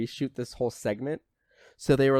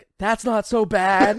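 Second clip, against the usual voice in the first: badly acted, hammy, loud, drawn-out high yell; 9 semitones higher, 7 dB louder than usual. Recounting a man riding a hog on a dirt road, retelling a yell. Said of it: "Like he's yelling it".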